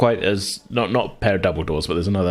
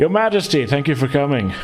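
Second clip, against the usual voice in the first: booming, grand host voice, pitched up; 7 semitones higher than usual. Narrating a ballroom scene in a game, voicing the Baron: booming Baron voice. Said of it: "the booming voice of the Baron saying".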